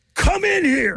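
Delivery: high-pitched, piercing shout. Retelling how a man yelled to another guy in the office, retelling a yell. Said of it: "He yelled to another guy".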